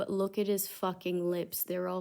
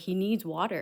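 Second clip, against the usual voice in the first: mock stern, heated yelling; 3 dB louder than usual. Parent retelling confronting the staff over her son, acting out stern, heated yelling. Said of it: "very sternly, like starting to get heated and, and yelling".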